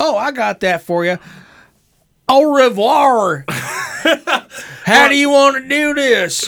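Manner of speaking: put-on loud, high-pitched Southern gentleman Kentucky Colonel accent. Acting out a dialect coach answering a request for a southern French woman, Butch in a Kentucky Colonel voice. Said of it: "Every voice turns into a Kentucky Colonel".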